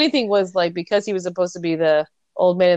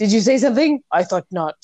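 put-on fake French accent, higher; 3 semitones higher than usual. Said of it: "he does this fake French accent".

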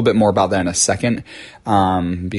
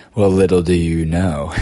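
low, sexy put-on radio voice. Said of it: "my server was saying I should do radio".

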